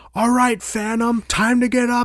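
far-off, high-pitched yelling. Retelling a guard waking everyone in the gym, imitating someone yelling. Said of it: "she's like yelling".

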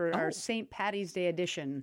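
plain

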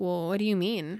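plain

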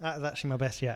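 usual speaking voice

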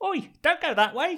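put-on cockney-accented creature voice. Quoting a film's talking worm: cockney worm voice. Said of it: "The little cockney worm".

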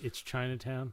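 normal talking voice

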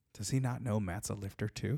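mock snide aside voice. Retelling what the person sitting next to them said, retelling a snide remark. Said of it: "snidely goes".

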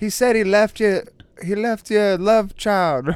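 bad put-on accent, half Irish. Acting out a psychic hotline call, answering the caller, bad Miss Cleo accent. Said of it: "Such a shitty accent on my part".

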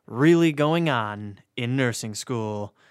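rehearsed, canned, scripted-sounding stock host delivery. A podcast host introducing the episode, canned scripted delivery. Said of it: "that sounded really canned".

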